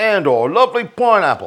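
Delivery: Australian accent. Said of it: "I get an Australian accent when I talk about the pineapple".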